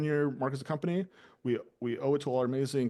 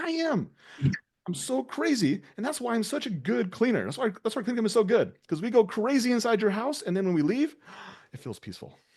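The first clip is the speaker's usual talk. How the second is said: unhinged, crazy-sounding sales pitch voice; 9 semitones higher, 4 dB louder than usual. Acting out a cleaning-company caller answering on the phone: sounding crazy. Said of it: "you sound crazy".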